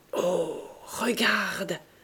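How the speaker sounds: astonished, stunned, caught-off-guard exclamation. Glancing into their old café through the open door, stunned. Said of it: "Dit Sandoz stupéfait".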